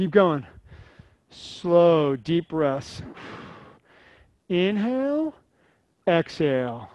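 slowed-down pace. A speaker leads listeners through slow breathing, talking slower. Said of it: "I'm talking slower".

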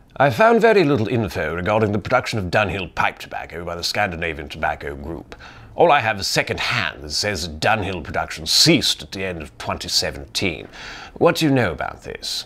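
cartoonish, exaggerated put-on upper-class English accent. Reading out a sent-in question, in a cartoonish upper-class english accent. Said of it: "I'll just use my like upper class cartoonish English accent".

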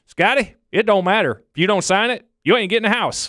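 very high-pitched put-on Texan accent. Recalling signing forms, the speaker quotes his buddy, imitating his Texas accent. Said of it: "he looked at me in his Texas accent and said".

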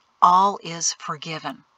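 plain

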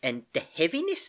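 ordinary delivery

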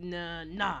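usual speaking voice

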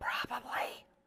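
secretive whisper, barely voiced, very quiet. Retelling a woman's reply to the brother-in-law, retelling a whisper.

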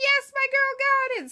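acted very high, thrilled excited scream. Retelling watching a player win immunity: imitating her own excited scream. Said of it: "I was screaming like".

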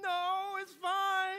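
mock sobbing, high and loud. Retelling answering whether the injured arm hurt, imitating own past weeping. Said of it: "I am weeping".

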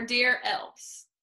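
ordinary talk

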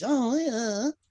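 very high, twangy, nasal voice. Imitating Bev's incredulity: Bev's nasal twang impression. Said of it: "it's not the best impression in the world".

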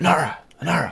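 high-pitched loud whisper meant to carry. A player's character calls out to get a woman's attention, loud whisper. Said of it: "like a whisper, but, like, loud enough".

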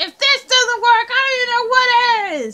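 high, frustrated, fed-up yelling with "what" drawn out. Voicing a character frustrated with a kitchen layout: yelling in frustration. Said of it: "Why are you yelling?".

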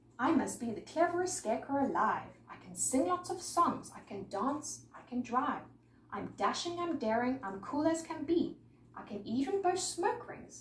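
ordinary delivery

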